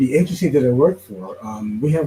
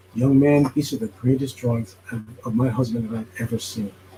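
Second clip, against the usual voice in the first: tender, heartfelt, soft-spoken, sweet, sincere voice; 2 semitones lower than usual. Retelling what a leader told the speaker: imitating a gentle, sincere voice. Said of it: "the most gentle, sweetest, most sincere voice".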